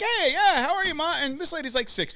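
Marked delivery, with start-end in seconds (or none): 0.0-1.1 much higher, bright, eager voice. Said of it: "I was like".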